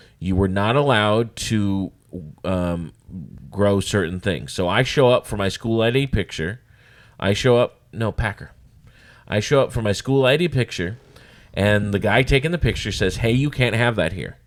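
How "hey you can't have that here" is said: put-on condescending voice. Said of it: "real condescending like that".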